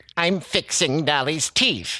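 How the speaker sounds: high-pitched cartoon elf character voice. Asked for the dentist routine, answering as the elf in Hermey the elf voice. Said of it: "your Hermie voice".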